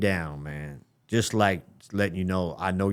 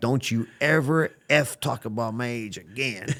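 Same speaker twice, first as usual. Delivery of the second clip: mock furious, angry tone, pitched higher; 4 semitones higher than usual. Retelling how someone got in his face and warned him: imitating an angry warning. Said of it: "he got right in my face and put his finger in".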